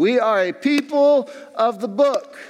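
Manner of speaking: very high, twangy southern preacher voice. The speaker quotes his favorite pastor in texas, imitating the pastor's southern twang. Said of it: "would always say in his southern twang".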